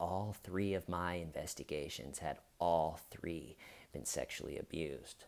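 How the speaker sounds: very low, very hushed, confiding whisper. Retelling how he whispered to the investigator, quiet whisper. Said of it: "he like gets all quiet, he whispers to the investigator".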